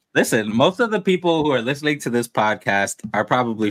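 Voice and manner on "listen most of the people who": usual speaking voice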